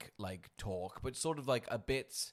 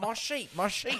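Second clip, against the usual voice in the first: put-on high-pitched New Zealand accent; 10 semitones higher, 4 dB louder than usual. Joking about the Cyclops calling for his sheep: New Zealand accent Cyclops. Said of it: "That's where he's New Zealand".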